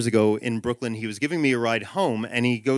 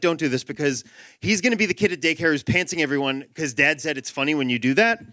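plain

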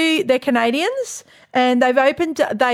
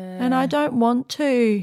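put-on flat, depressed monotone, much slower; 3 dB quieter than usual. Retelling a little girl overheard on a teacher's Zoom call: imitating a flat, depressed voice. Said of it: "Like in the flattest, most depressed voice you've ever heard".

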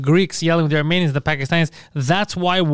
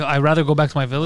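normal talking voice

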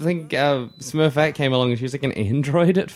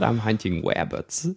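bad cartoon character voice; 5 semitones lower, 4 dB quieter than usual. Trying out a cartoon character's voice after admitting doing it poorly: attempted Elmer Fudd voice. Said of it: "How does he say it?".

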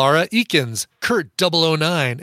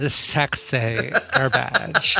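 creaky voice with lisp; 3 semitones lower than usual. Comparing favourite celebrity line readings, Drew Barrymore impression, vocal fry and lisp. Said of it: "It's like a vocal fry with a lisp".

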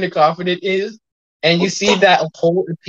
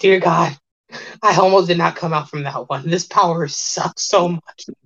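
shaken, relieved woman's voice. Voicing a woman who just wriggled out of a portal: relieved. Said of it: "And you see she goes".

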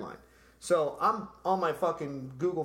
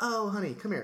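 put-on helpful man voice, much higher; 7 semitones higher than usual. Retelling asking for directions, imitating the man giving directions. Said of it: "Can't stop doing the voice".

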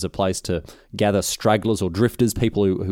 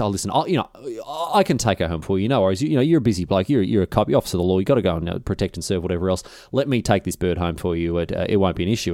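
usual speaking voice

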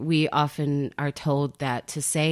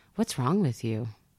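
very even, calm voice; 3 semitones lower than usual. Explaining how to ask someone what's wrong with them, demonstrating in a very calm voice. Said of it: "very calm voice".

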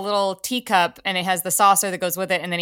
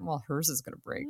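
very hushed, quiet, smug, self-satisfied voice; 3 semitones lower, 13 dB quieter than usual. Retelling a past thought about the other's glass breaking: retelling own smug thought. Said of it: "And I smugly thought".

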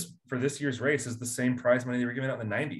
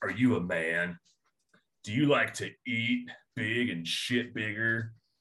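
commercial announcer delivery, quieter; 2 semitones lower, 3 dB quieter than usual. Mocking how car commercials talk, doing a Ford commercial voice. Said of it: "It's always the Ford commercials. They're like".

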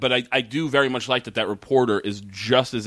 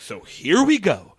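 mock childlike stilted delivery, higher; 9 semitones higher, 4 dB louder than usual. Retelling how the reporter delivers her lines: imitating poor line delivery, like a child. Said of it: "And she's saying it like that".

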